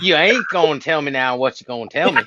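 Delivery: convincing, authentic American Southern accent with drawl. Asked to show how they sound from the South; Southern accent. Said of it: "pretty authentic sounding Southern accent".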